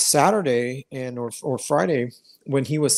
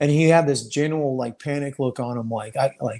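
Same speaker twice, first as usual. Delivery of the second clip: ordinary delivery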